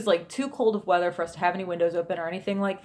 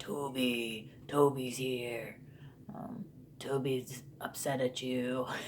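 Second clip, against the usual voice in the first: very hushed, low, eerie guttural murmur, one word drawn out; 6 semitones lower, 10 dB quieter than usual. Imitating a child talking about Toby, creepy guttural voice. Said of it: "he would use this weird, creepy, guttural um, voice".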